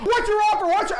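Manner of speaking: loud, insistent screaming, over and over. Explaining calls to property owners, mimicking how they answer, imitating owners screaming demands. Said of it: "they're like screaming at me like".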